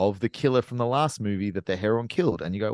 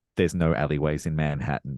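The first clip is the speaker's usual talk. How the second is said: whisper with lower pitch; 5 semitones lower than usual. Retelling what the person in the next seat whispered during the movie, retelling a whisper. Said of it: "leaned over and whispered to me".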